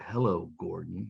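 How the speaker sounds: eerie, creaky, ghostly spirit voice. Retelling a movie scene where a spirit speaks: imitating a ghostly spirit voice. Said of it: "you hear this kind of ghostly spirit".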